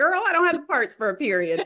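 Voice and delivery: loud, high, put-on hee-hawing while laughing. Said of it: "I started hee-hawing".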